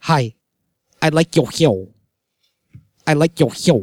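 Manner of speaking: put-on strange, offbeat, weird-sounding girl's voice. Retelling how a girl used to greet him, imitating her weird talk. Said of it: "she, like, talked hella weird".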